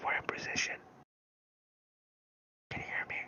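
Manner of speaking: very quiet, barely audible whisper. Reporting in over the radio without giving away their position: very quiet whisper. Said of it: "you're too quiet".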